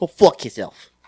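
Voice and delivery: put-on New York accent, loud and high. Retelling what someone said as a joke, in a new york accent. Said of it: "Fucking New York accent".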